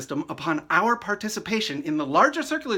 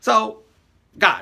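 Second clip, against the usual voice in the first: ordinary talk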